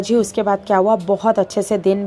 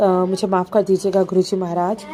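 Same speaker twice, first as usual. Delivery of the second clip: ordinary delivery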